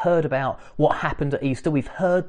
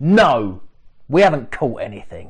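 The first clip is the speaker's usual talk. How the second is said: terse, short, curt, snappy delivery; 3 semitones lower, 4 dB louder than usual. Imagining the fishermen's one-word answer: imitating a short, snappy answer. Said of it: "short and snappy".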